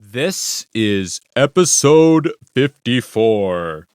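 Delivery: super dramatic, theatrical, swooping put-on voice. Podcast host announcing the episode number, in a dramatic new voice. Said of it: "That is my my new voice".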